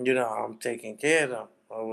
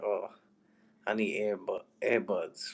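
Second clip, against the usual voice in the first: quiet muttered aside under the breath; 2 semitones lower, 5 dB quieter than usual. Retelling what she said on the bus: imitating someone muttering under breath. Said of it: "under her breath".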